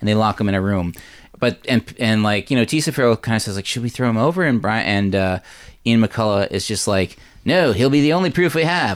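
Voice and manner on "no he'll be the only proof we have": Canadian cartoon accent, pitched high. Speaker recaps a show, quoting a character's reply: Terrence and Phillip accent. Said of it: "I don't know why I did with that accent".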